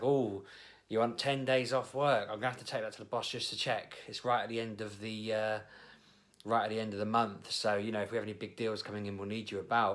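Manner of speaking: usual speaking voice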